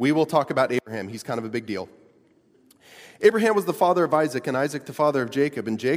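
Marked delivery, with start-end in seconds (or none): 3.2-6.0 brisk, quick, assured, confident reading. Demonstrating a reading of the genealogy of Jesus: quick confident reading. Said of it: "read it quickly and confidently, which I'm going to demonstrate for you now".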